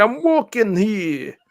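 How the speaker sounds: put-on voice, pitched very high. Doing an exaggerated accent, sounding like Christopher Walken. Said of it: "that sounded like Christopher Walken".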